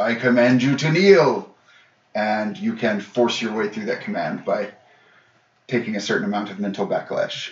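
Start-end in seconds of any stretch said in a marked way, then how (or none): 0.0-1.5 put-on commanding dragon voice. Voicing a dragon that commands the players, in Kimmet's commanding dragon voice. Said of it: "And in Kimmet's voice".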